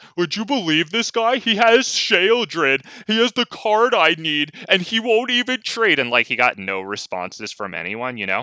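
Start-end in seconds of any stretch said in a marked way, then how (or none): 0.2-6.0 very high, raised, complaining voice. Retelling a complaint made within earshot: imitating someone raising his voice. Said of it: "he always raised his voice loud enough so that I could hear him".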